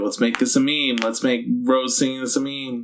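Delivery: plain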